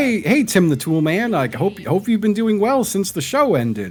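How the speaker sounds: put-on, friendly TV actor voice. Retelling a paid video message addressed to Tim the Tool Man: imitating Richard Karn. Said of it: "he would come on and be like".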